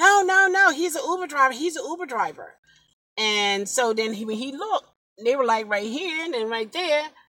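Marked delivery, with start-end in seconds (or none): 0.0-2.5 high, loud, full-cry screaming. Retelling a passenger shouting at people around the car, imitating a woman screaming. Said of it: "She was screaming".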